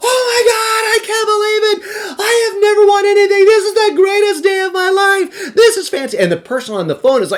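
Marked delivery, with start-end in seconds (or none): 0.0-6.2 very high, fake, out-of-control screaming fit. Retelling a joke he played on a prize-call sales pitch: retelling his fake screaming. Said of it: "I just start screaming. I'm losing it".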